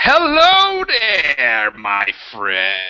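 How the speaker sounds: very slow, loud, swooping, drawn-out screaming. Voicing a person who suddenly screams a greeting: screaming greeting. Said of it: "this person screaming, like".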